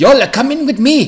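fake, bad Japanese accent, very high-pitched. Asked by the other speaker to do the japanese accent, voicing a character: bad japanese accent. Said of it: "I think you should do the Japanese accent".

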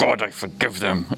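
grudging, forced-out words through gritted, clenched teeth. Speaker acting out their past self praying, retelling through clenched teeth. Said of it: "almost like through clenched teeth".

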